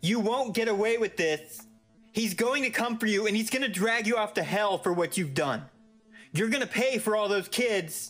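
very high-pitched, shrill yelling. As the narrator walks out, a man shouts from the apartment: shouting. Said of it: "I heard Rottenbacher shouting".

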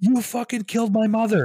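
mock shrieking scream, very high and loud. Retelling how a shirtless man screamed at an old man: imitating a man screaming. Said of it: "screams at this old guy".

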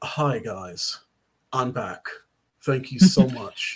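bad, slow, fake British accent. Quoting a man's inspirational Instagram video in a horrible British accent. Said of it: "and this is a horrible British accent".

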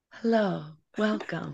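soft on-air radio host voice. Hosts greeting listeners at the start, putting on an NPR voice. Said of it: "put on our like our SNL or NPR voice".

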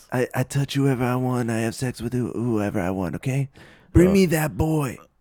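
put-on brash politician voice. Doing a mocking impression of Trump bragging: Donald Trump impression. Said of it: "We've got great Trump impressions".

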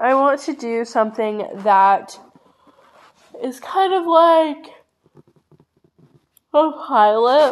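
words stretched out by a yawn. Streamer on a podcast planning a pilot for the channel, yawning while talking. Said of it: "I'm yawning, like, so much".

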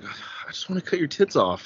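calm menacing voice, almost whispered, under the breath. Retelling a film scene where Jim finally finds Kat: imitating Jim, calm yet violent. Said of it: "he's so calm about it and violent".

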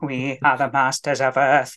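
weedy, dead-level monotone. Comparing how the TV series voiced the villains: weedy Dalek voice. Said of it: "a very weedy".

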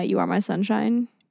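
normal talking voice

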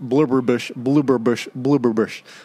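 said fast three times over. Repeating a phrase three times after being asked to: said fast three times. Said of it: "Say that fast three times".

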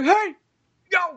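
very high-pitched shout sounding far off. Retelling how a guy shouted from way down the parking lot, imitating a shout. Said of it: "this guy shouted like".

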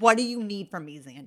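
very loud, ugly, fed-up, exasperated outburst. Showing how the speaker usually asks zandy, acting out frustration. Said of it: "I say that in frustration".

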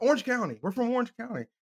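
blurted out high and suddenly, all at once. Retelling how another person suddenly answered where they were from, retelling a sudden blurt. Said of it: "Charles just blurts out".

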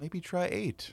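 thoughtful, offhand psychiatrist tone. Acting out a psychiatrist thoughtfully answering a patient: imitating a psychiatrist. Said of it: "here's my impression of a psychiatrist".

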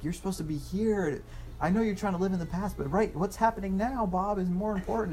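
shrill, very high-pitched scolding yell. Describing a movie scene, speaker acts out a woman yelling at a man, retelling a yell. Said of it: "she's like yelling at him".

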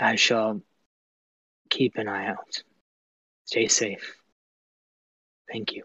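mumbling under breath. A player voices his character's short reply message, under his breath. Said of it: "he kind of under his breath".

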